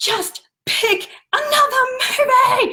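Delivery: mock very high, shrill, drawn-out, top-of-the-lungs screech. Retelling snapping at a three-year-old daughter: imitating a screech. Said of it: "I screeched".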